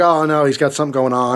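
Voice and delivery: plain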